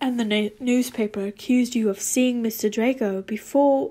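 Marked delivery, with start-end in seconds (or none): none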